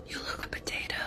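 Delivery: whispering. Calling someone close to tell them something, whispered. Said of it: "so I can whisper it to you".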